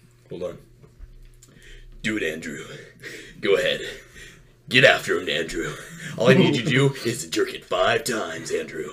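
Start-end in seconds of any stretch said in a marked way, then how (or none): 2.0-8.9 put-on monster voice, lower and quieter. Showing friends a Maury impression, egging on Andrew. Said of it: "I thought that I did a good Maury".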